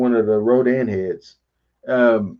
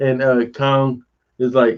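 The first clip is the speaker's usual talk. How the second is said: ordinary delivery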